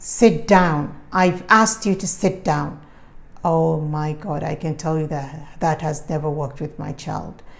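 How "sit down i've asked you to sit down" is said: loud, authoritative, commanding delivery. Parent advising parents, showing the tone not to use with a child: commanding voice. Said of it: "A commanding voice is something like".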